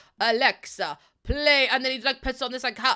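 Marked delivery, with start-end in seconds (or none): 0.2-1.7 put-on vampire accent. Retelling a video of a man talking to Alexa: Dracula accent. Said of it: "he's doing, like, um, Dracula's accent".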